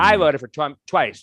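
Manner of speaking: put-on bold, loud, proud public declaring tone. Retelling a woman at Trader Joe's speaking out of nowhere, imitating a loud declaration. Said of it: "she just loudly says".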